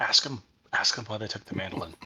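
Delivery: soft, hushed whisper. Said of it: "I'm whispering to Frody".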